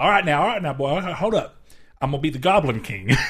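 put-on mock rural American accent. Joking with others about role-playing with accents, speaker shows a redneck accent. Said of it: "imagining the rednecks having their own accent".

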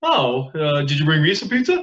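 corny, played-up, cheesy one-liner delivery. Retelling how the show's host greets a caught man: imitating a cheesy one-liner. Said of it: "comes in with a cheesy fucking one-liner".

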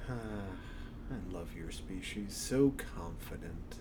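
slow, low, hushed, menacing, sinister demonic voice. Narrating, the speaker voices a figure leaning against a pillar, sinister voice. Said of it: "This is a sinister voice".

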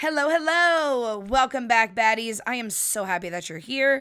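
slightly raspy, a little hoarse, rough-edged voice. Greeting returning listeners, in a slightly raspy voice. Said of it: "My voice is a little raspy this week".

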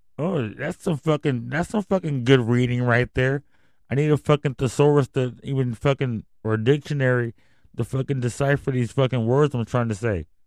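ordinary talk

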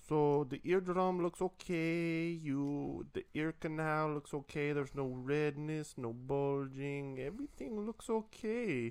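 put-on slow, heavy Indian accent, laid on thick. Retelling what the doctor said after looking at his ear, thick Indian accent impression. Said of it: "has a very thick Indian accent".

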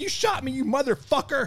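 shrill, very high, furious yell. Retelling being shot, imitating yelling and cussing at the shooter. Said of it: "I'm yelling and cussing at him".

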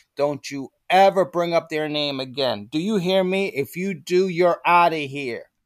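play-acted angry, threatening tirade, high and heated. Retelling how George Steinbrenner scolded him: imitating Steinbrenner screaming. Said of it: "he screamed at me".

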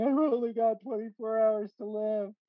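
very high, blubbering, sobbing wail. Retelling an episode, the speaker acts out Homer; imitating Homer crying. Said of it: "And he's like crying".

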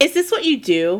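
sneering, scornful. Krampus to santa, sneering. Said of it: "Krampus sneered".

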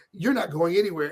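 ordinary delivery

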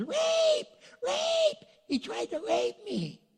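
loud yelling.

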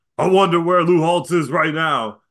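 high, loud screaming into the mic. Retelling a coach grabbing the microphone: imitating Ryan Day screaming. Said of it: "grabs microphone and screams".

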